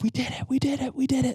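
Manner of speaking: mock very high, wild, out-of-control joyful elation. Speaker recalls Andrew netting his salmon, retelling going wild with joy. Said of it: "I lost my absolute mind".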